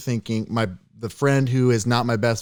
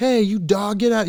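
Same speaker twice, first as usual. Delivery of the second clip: put-on very high, shrill, taunting shout; 10 semitones higher, 3 dB louder than usual. Retelling a kid provoking a dog at night: imitating a kid yelling. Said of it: "he starts yelling".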